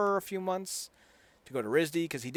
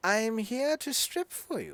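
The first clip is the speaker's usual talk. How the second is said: high, slow, unconvincing put-on British accent; 9 semitones higher than usual. Retelling a scene where a woman puts on a bad British accent. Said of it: "in her British voice".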